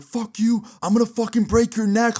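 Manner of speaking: enraged screaming, pitched very high. Retelling the other fighter yelling back after being broken up, retelling a furious yell. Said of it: "Zach's yelling back".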